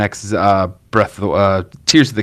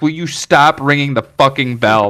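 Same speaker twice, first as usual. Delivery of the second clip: imitated screaming, higher pitch; 4 semitones higher than usual. Retelling how a game character screams about ringing the bell: imitating someone screaming. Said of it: "eventually he just starts screaming at you".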